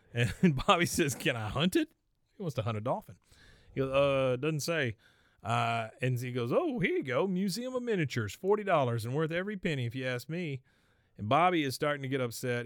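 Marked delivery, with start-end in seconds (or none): 6.5-10.6 put-on playful teasing, pitched up. Retelling what a man said to Bobby about activities to book, mock-teasing. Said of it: "I was just teasing you".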